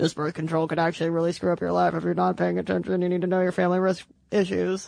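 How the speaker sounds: fast, low, rushed ad-disclaimer voice. Imitating the warning at the end of a birth control ad: fast low ad disclaimer voice. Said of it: "the fast talking, like low voice comes into the end being like".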